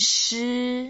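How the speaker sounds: flat high first tone on shi. Teaching chinese tones, shi as the first tone: flat high first tone on shi. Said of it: "shi is the first tone, so you make it flat".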